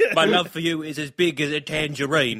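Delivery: put-on elderly British man voice and accent. Joking that her voice and Alfred's would be exactly the same, do a Michael Caine impression. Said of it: "We thought it was funnier to do Michael Caine impressions".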